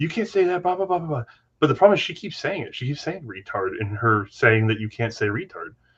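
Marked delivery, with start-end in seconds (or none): 0.0-1.2 put-on drunk woman's pitched-up drunken rant. Retelling how a drunk woman kept going off at people: imitating a drunk woman going off. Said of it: "she's just going off".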